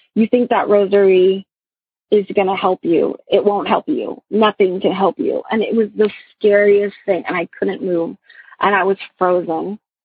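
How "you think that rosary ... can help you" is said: put-on sinister, evil laughing voice. Retelling a voice heard during sleep paralysis: imitating an evil laughing voice. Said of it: "an evil voice laughing in my ear saying".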